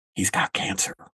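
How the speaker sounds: low, hushed voice brought down a notch. Showing how Northeasterners say something bad, in a lowered hushed voice. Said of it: "they'll usually lower their voice and go like".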